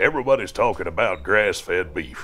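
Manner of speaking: weathered, grizzled Western cowboy voice. A voice actor demonstrating his commercial voices, in a grizzled cowboy voice. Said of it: "the grizzled cowboy voice".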